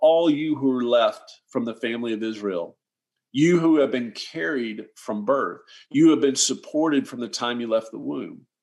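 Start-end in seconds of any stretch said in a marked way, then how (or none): none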